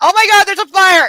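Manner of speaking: very high, loud, shrieked voice. Retelling a kitchen fire while on the phone with a cousin: imitating own shriek. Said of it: "shrieked in her ear and went".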